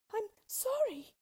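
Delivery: very high, frightened, stammering voice. Narrator reads a character's reply to the melting witch, stammering. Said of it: "stammered Dorothy".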